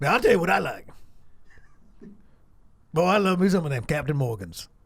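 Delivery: put-on older man's character voice.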